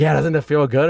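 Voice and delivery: ordinary talk, nothing marked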